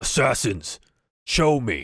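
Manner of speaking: halting, broken Common. Game master voicing a helmeted figure answering the party, in broken Common speech. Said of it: "speaks a little bit of broken common".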